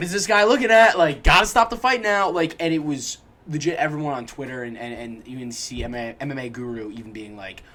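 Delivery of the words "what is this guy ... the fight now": put-on urgent, loud, rushed yelling. Recounting people all yelling for a fight to be stopped, retelling a yell. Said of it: "all yelling".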